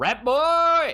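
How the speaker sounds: shouting out loud. In a tabletop game, a player's character calls out to their friend: yelling. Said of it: "Don't think you want to yell that out loud".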